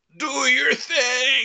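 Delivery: very high scream, thing drawn out. Sliding toward a dragon in the game, calling to an ally: screaming. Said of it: "I'm screaming".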